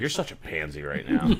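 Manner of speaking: disapproving, scolding fatherly voice. Imitating a dad mocking his son for not handling spice: imitating his dad scolding. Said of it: "my dad would be like".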